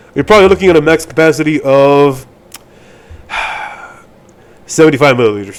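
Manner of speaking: deflated, let-down, disappointed delivery. Speaker finishing an estimate, disappointed tone. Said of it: "I don't know why I sound so disappointed".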